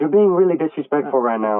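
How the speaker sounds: stern scolding tone. A student retells being scolded in front of the class, retelling a teacher's yell. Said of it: "yelling at me".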